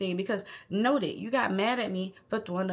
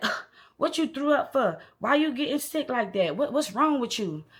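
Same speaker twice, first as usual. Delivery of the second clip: mad, annoyed, irritated griping, pitched up; 5 semitones higher, 4 dB louder than usual. Retelling a date's reaction to the speaker throwing up: imitating someone mad and irritated. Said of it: "he's really mad and irritated".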